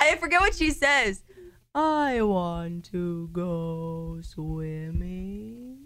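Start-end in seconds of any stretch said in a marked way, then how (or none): 1.7-5.8 soft, very slow whale voice, every word stretched. Asked by a host to do the whale voice from Finding Nemo, in Dory's whale voice. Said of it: "Can you do the whale voice?".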